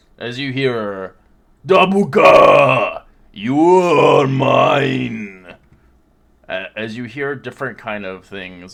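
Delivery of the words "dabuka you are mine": croaking monster voice, higher and louder. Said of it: "as it croaks".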